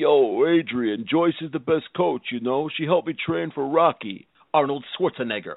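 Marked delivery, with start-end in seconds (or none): 0.0-4.3 put-on slurred tough-guy voice, quieter. Endorsing a coach as a celebrity: Sylvester Stallone impression. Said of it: "Sylvester Stallone".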